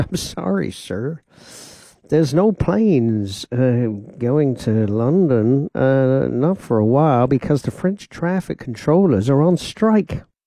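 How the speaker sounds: slow, courteous put-on American accent. Retelling what a kind man at the airline desk said; american accent. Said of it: "I can't do the American accent all the time".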